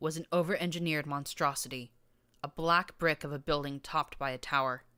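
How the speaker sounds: plain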